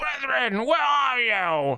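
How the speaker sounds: play-acted, very high, stretched-out scream. Speaker acts out what another guy is yelling, retelling a scream. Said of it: "He's like screaming for his".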